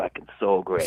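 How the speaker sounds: thick put-on Boston accent. Answering a request to hear an accent: put-on boston accent. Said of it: "do you guys wanna hear a Boston accent?".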